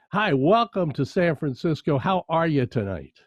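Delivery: ordinary talk, nothing marked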